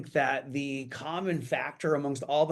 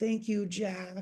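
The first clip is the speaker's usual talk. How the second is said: put-on soft, small, sweet, high-pitched little kid voice; 5 semitones higher, 6 dB quieter than usual. Retelling a scene, doing little Dylan thanking Jack in his cute little voice. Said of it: "in the cutest little voice ever".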